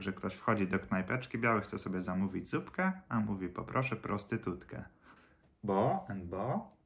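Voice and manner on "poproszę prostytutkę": plain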